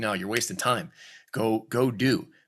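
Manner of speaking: ordinary talk, nothing marked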